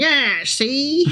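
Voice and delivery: scoffing put-on board-game tycoon voice. Showing another speaker how the Monopoly man sounds: imitating the Monopoly man. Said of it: "I can see him coming up and going".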